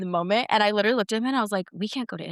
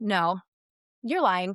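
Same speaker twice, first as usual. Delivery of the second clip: ordinary talk, nothing marked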